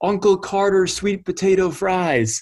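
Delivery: put-on high pitched, sudden called-out yell. Retelling calling out to a player walking onto the field: imitating own past yell. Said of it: "So I literally yell out".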